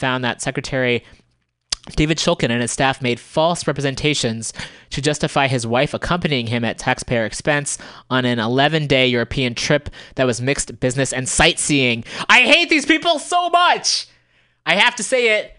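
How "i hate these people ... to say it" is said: very high, suppressed angry yell held in check. Reacting to a news report on cabinet travel costs: holding back a yell. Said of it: "I'm trying not to yell into the mic".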